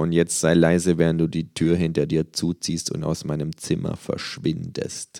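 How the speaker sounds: plain reading voice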